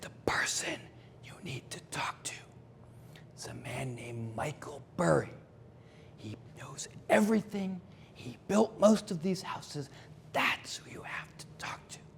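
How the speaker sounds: hushed, secretive, conspiratorial whisper. Retelling what a woman leaning in secretly told them: imitating someone whispering. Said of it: "she says in a whisper".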